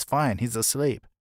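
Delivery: ordinary delivery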